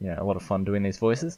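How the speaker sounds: ordinary delivery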